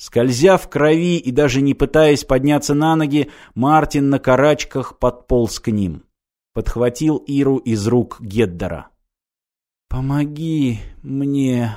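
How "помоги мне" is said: in a whisper. A girl pierced by a sword speaks to Martin, whispering. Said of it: "прошептала девушка".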